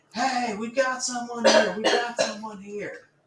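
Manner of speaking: very high, loud, alarmed shout. A dwarf spots an intruder and yells to the main crowd: yelling an alarm. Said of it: "the dwarves are yelling to the main crowd".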